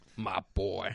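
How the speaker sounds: put-on cowboy drawl. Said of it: "I'll just start talking with the accent".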